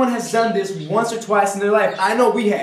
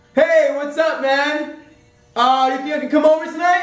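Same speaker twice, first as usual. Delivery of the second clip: high-pitched shout; 6 semitones higher than usual. In a sketch, the caller on the other end of the phone, yelling into the phone. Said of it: "why are you yelling?".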